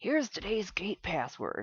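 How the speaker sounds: quiet, half-whispered voice. Game narrator voicing a character handing over the gate password, half-whispered.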